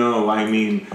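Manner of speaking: low deadpan delivery, no expression. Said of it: "her face is all deadpan".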